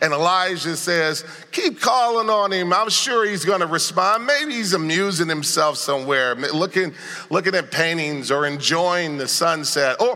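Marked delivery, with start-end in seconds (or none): 1.5-10.2 high, sarcastic, mocking tone. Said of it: "you notice the sarcasm".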